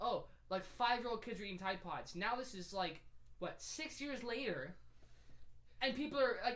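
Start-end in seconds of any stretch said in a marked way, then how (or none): none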